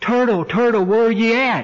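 put-on very high, hollered-out call. Telling a story, the rabbit calls for the missing turtle: hollering out. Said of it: "the rabbit hollered out".

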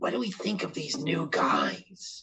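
hushed, soft, huddled whisper. Whispering in character to the team about the new guys: whispering. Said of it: "and whisper to my".

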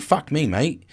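attempted, botched Australian accent. Imitating british viewers scolding the speaker, attempted australian accent. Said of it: "I tried to go Australian".

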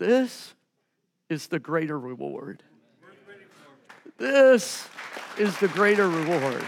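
words pushed out through tears, crying voice. Retelling what was said last night while watching: reenacting crying speech. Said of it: "and I'm crying going".

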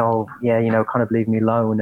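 ordinary talk

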